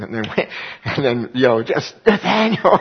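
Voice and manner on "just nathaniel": acted scream, much higher. Retelling searching a mall passageway for nathaniel: retelling screaming a name. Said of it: "I just start screaming".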